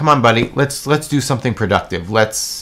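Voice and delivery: ordinary delivery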